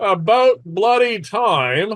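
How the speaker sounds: very loud, very high, shrill, booming mocking jeer. Narrating a voice the players hear, in a loud, mocking voice. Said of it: "you hear in a loud, mocking voice".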